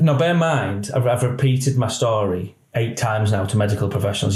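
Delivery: ordinary talk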